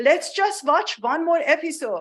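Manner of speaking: put-on Persian-accented English. Retelling a line from mom: imitating mom's persian accent. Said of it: "my mom says with her Persian accent".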